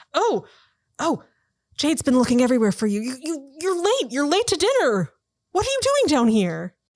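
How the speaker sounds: a little startled, high and swooping pitch. Voicing a servant who finds the players down below, a little startled. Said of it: "she startles a little bit and she's like".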